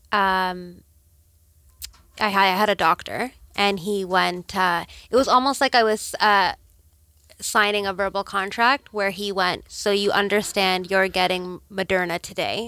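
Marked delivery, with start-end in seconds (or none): none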